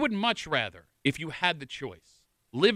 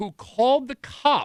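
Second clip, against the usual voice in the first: slow, deliberate, raised voice, spelled out emphatically; 8 semitones higher, 5 dB louder than usual. Repeating a statement to the guys a second time: speaking slower. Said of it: "I'm going to say that again a little bit slower".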